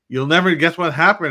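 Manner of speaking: loud high-pitched yell. Recalling mom yelling from the front step, retelling mom's yell. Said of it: "she's yelling at me".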